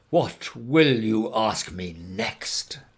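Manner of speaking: slow, pompous, scornful sneer with dreadful scorn. Narrator reads the python rock snake answering the elephant's child, with dreadful scorn. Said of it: "This is the way bicoloured python rock snakes always talk. / "Rash and inexperienced traveller, we will now seriously devote ourselves to a little high tension, because if we do not, it is my impressi".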